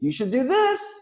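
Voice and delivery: question-like pitch rise at the end on "this". Showing how going up sounds unsure: rising pitch at end on 'this'. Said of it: "When you go up, ... It's like".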